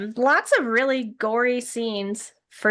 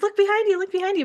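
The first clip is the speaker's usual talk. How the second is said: high-pitched, mock yelling. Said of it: "he's yelling at the characters".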